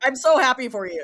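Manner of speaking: very loud, angry-sounding voice. Congratulating someone who just announced an engagement, with angry-sounding congratulations. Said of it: "you sounded so angry".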